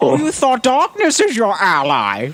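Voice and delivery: very high character voice with swooping pitch. Answering the other speaker's question about doing it as Bane: Bane voice. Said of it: "Should I do it as, like, Bane?".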